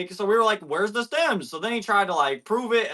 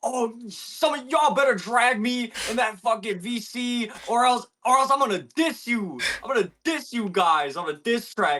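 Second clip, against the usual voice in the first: shouted rant, higher pitch; 4 semitones higher than usual. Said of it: "talking in all caps".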